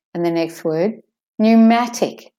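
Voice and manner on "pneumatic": pneumatic with new said high and loud. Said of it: "The new is stressed".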